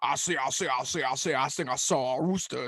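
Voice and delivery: large cartoon rooster character voice. Explaining who Foghorn Leghorn is, the speaker does the cartoon chicken, Foghorn Leghorn voice. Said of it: "he is the big chicken that goes".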